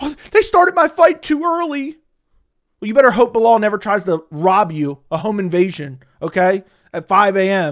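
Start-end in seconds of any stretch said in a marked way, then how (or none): 0.0-2.0 tearful, blubbering, high, weepy crying voice. Mocking a fighter's complaint about his fight, imitating Leon crying. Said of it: "here he is crying for twenty minutes".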